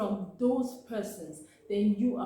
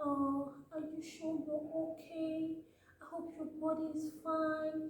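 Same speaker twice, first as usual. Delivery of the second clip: put-on soft, high, condescending baby talk; 8 semitones higher, 6 dB quieter than usual. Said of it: "you start using baby voices".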